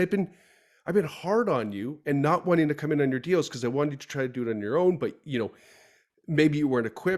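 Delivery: normal talking voice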